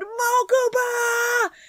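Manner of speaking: excited, high-pitched, drawn-out, fan-like scream.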